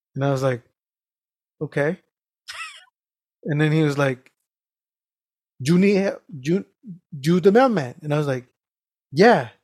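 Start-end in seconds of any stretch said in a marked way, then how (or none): 5.6-8.0 put-on heavy Spanish accent, much slower. Retelling a mechanic's question to him, in a heavy Spanish accent. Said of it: "He has a heavy Spanish accent".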